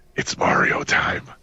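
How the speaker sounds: hushed, creeping, sneaky whisper. Imagining someone sneaking up behind a person: acting out a whisper in their ear. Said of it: "leaning over in their ear and whispering".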